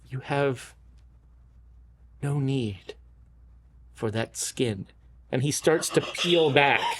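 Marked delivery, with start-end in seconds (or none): 0.1-4.8 low, hushed half-whisper, close in the ear. Narrating a game scene, the speaker voices a figure half-whispering in a player's ear. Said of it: "he whispers in your ear".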